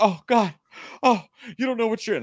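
mock, very high-pitched, tearful crying shriek. Retelling how a woman came out of the theater: imitating a screaming woman in tears.

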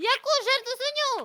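startled, high, loud shouting.

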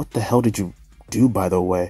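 ordinary delivery

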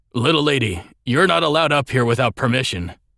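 rough, gravelly guard voice. A guard warns an approaching woman she may not come up, gravelly voice. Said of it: "one of the guards said in a gravelly voice".

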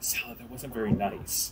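soft, hushed, quiet half whisper. Voicing a character who quietly scolds a companion: half whisper. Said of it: "kind of half whisper".

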